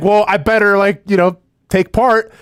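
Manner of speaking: ordinary talk, nothing marked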